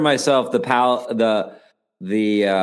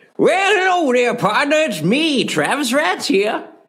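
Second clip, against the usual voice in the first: very high put-on old-timer cowboy prospector voice. A podcast co-host greets listeners after being introduced, in an old prospector cowboy voice. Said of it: "you went with like an old prospector cowboy voice".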